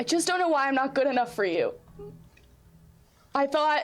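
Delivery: on the verge of tears. Voicing a character answering an apology as tears well: tearful. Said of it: "the tears start to well".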